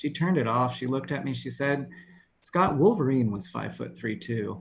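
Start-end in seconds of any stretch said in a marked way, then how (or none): none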